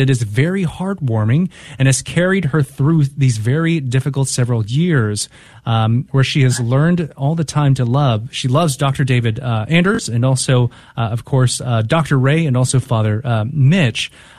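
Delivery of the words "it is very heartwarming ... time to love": ordinary talk, nothing marked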